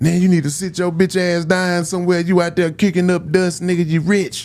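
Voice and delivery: squeaky, very high-pitched borrowed voice. Reading aloud a letter from Pimp, imitating Pimp's voice. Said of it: "I read it in his voice".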